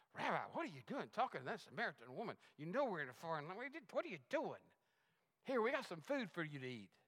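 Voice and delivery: frustrated, animated voice. The speaker retells the disciples questioning Jesus: acting out frustrated disciples. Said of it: "hear the frustration in their voice".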